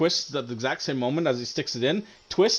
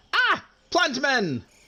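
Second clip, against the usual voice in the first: very high, startled shrieking cry; 13 semitones higher, 3 dB louder than usual. The game narrator voices a character on his first turn since being surprised, Wadumu shrieking. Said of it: "he shrieks and he says".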